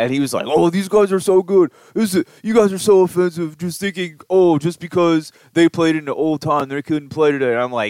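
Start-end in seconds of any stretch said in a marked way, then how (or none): 0.5-7.5 high, raised, offended indignant protest. Retelling an argument about baseball teams, imitating a friend being dumb. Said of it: "impersonation of him".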